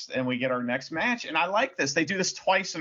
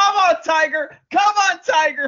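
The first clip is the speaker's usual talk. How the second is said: very loud, high, shrill screaming; 10 dB louder than usual. Act out Liger on commentary during the match, imitating Liger yelling. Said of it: "you can hear Liger yelling".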